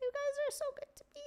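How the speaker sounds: squeaky, very high, soft little voice, barely above hush. Streamer thanks chat for their support, voice gets really high. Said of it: "My voice gets really high".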